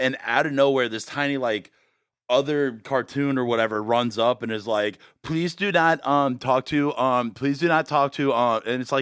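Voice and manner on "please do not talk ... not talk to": put-on stammering child voice. Retelling a VR clip where a tiny cartoon kid speaks: imitating a stammering kid. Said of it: "a kid stammers over a sentence".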